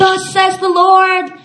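very high, slow, super-dramatic, over-the-top delivery. Mocking an over-the-top way to prophesy: mock super-dramatic proclamation. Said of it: "super dramatic, like, make a scene".

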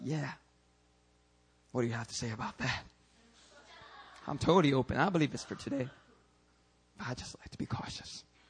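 mock self-satisfied pride. A preacher imitating people who expect a cookie for saying this, mock-proud of themselves. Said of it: "They are so proud of themselves".

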